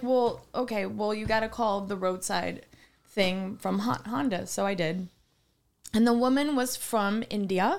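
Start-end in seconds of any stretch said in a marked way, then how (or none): none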